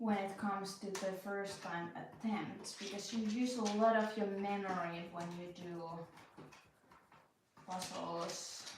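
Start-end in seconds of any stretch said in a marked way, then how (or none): 0.0-2.8 slow, drawn-out, puzzled explaining tone. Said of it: "You wonder why I'm talking so slow".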